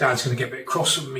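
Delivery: plain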